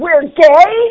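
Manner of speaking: shrill, very loud, high-pitched outburst. Retelling what Rick blurted out during a filmed take, a really loud outburst. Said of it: "And Rick really loudly goes".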